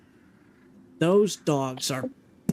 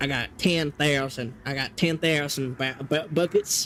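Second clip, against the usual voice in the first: put-on Texas accent. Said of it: "A Texan".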